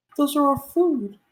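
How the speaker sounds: put-on high, video game NPC girl voice.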